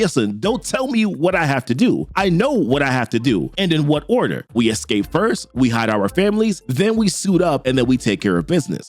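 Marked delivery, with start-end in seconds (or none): none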